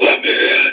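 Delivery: very deep demonic voice. Retelling a scary story about a lady, imitating her super low demonic voice. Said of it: "her voice went super low".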